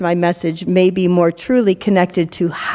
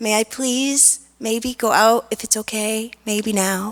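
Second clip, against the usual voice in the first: thin, tinny, tiny, far-off little voice; 3 semitones higher, 5 dB quieter than usual. Demonstrating audio with bass cut and treble raised, in a tinny little voice. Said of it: "the tinny little voice".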